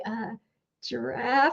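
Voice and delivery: soft, meek, tentative, timid, hesitant delivery. Retelling someone saying the code word: imitating someone saying it timidly. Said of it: "he was kinda timid 'cause I'm scary".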